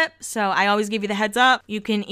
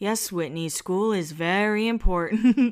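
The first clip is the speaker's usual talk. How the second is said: put-on calm, patient tone, slow and even delivery. Retelling what Lisa said to Whitney, imitating Lisa's calm voice. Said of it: "in her calm voice".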